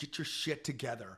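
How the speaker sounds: mock, ferocious, fierce voice edged with fear. Retell what she told you before you went to rehab, imitating a fierce, fearful voice. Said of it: "in the most fierce, fearful voice".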